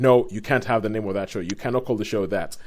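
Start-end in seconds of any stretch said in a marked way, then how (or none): none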